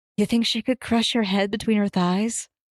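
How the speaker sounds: hushed, quiet whisper. Narrating a game scene, one character whispers a question to another: whispering. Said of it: "and whispers".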